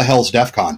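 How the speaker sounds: put-on flat deadpan delivery. Retelling the group's reply to a newcomer's question, deadpan. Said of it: "And just deadpan".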